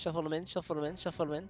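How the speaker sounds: rapid repetition, said three times fast. Answering a challenge to say the phrase three times: said three times fast. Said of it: "I said three times fast".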